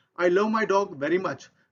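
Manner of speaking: ordinary talk, nothing marked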